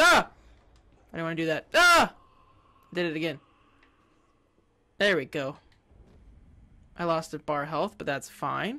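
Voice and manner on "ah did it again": screaming, louder. Gamer accidentally drops down again while playing: screaming. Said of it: "I didn't mean to scream that loud".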